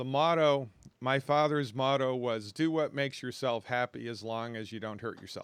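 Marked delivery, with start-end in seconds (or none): none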